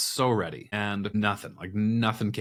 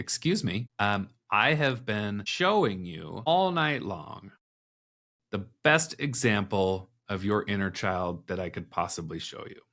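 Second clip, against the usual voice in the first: usual speaking voice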